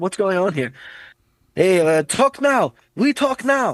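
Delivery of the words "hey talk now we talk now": slow, drawn-out, menacing villain voice. Describing Khabib's awful but menacing English, then doing a Khabib impression. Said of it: "is this a fucking villain from Die Hard?".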